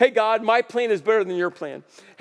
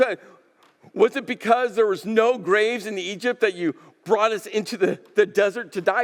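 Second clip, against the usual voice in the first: usual speaking voice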